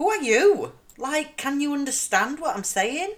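careful posh accent. Addressing a listener in America after episode one: posh voice. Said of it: "This is my actual posh voice".

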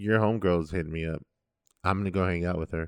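ordinary talk

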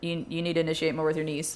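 deadpan, level monotone with no inflection. Retelling Brandon's correction on the push jerk this morning: imitating Brandon's monotone. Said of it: "he said it with about that monotone".

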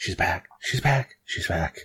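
soft, breathy whispered murmur. Narrating people at the station as the train arrives: whispering.

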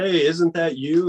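play-acted, loud yell. Retelling how a kid across the sports bar called out: imitating a kid yelling. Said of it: "this kid from across the bar yells".

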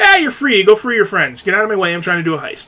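offhand, sarcastic, swooping, dismissive tone. The speaker retells a heist character brushing off a droid freer, mock-sarcastic, dismissive. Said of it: "rather sarcastically and dismissively goes".

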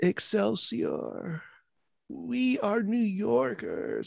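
very high, creaky, slow, drawn-out whine. Mocking how Andrew Cuomo talks, like he's crying: whiny Andrew Cuomo impression. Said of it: "he's, like, whining".

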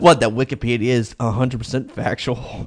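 snickering, laughing through the words. Questioning another speaker's remark: laughing while talking. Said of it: "he can't stop laughing".

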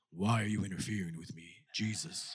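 very low, deep, dropped demon voice. Reading aloud the demon-possessed man's words to jesus, in a very low voice. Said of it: "Y'all didn't know I can go that low".

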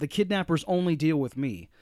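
ordinary talk, nothing marked

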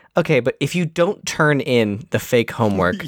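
ordinary talk, nothing marked

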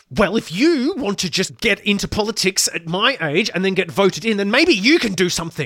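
put-on, very loud, high, through clenched teeth. Retelling a us politician's answer to a young girl, retelling speech through gritted teeth. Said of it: "just through gritted teeth".

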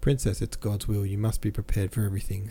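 usual speaking voice

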